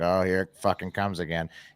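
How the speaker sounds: low grumbling mutter under the breath. Retelling someone signing in at a hearing: imitating muttering under breath. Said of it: "did his muttering under his breath".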